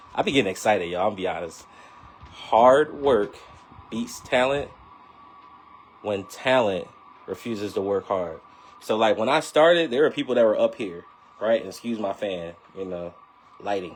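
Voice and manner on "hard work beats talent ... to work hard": slow, halting, careful, broken word by word. Speaker repeats a saying to the audience after saying it too fast: slower repeat. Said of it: "I'll say it again because I definitely was saying it too fast".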